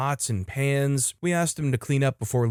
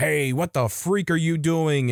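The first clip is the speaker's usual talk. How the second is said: put-on deep, loud shout; 3 semitones higher than usual. Retelling waking to a car thief and shouting from the porch: imitating a deep, loud shout. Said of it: "shouted from the porches deep and as loud as I".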